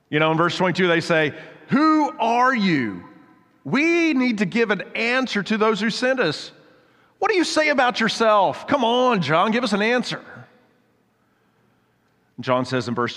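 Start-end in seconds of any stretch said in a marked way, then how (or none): 1.6-10.2 mock weary, exasperated, drawn out and high. Retelling the delegation pressing John for an answer: acting out exasperated questioning. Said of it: "you can almost hear the exasperation from this delegation".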